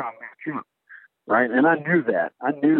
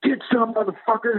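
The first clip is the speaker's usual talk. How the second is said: put-on very high-pitched, wild battle war cry; 10 semitones higher than usual. Retelling firing all thirty rounds on set: retelling own yell. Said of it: "and I yell".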